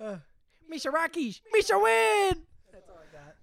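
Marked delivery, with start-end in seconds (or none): 0.7-2.4 put-on goofy alien voice, higher and louder. Taking a turn at the impression after another speaker: Jar Jar voice.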